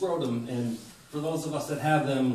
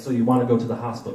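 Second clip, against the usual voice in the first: loud, dry, flat deadpan delivery; 2 semitones lower, 7 dB louder than usual. Retelling what the EMT asked after staring in disbelief: imitating a deadpan question.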